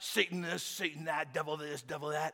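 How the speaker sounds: low, muttered, under-the-breath mumble. Telling a story about a man nearby, imitating someone mumbling. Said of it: "He's mumbling underneath his breath".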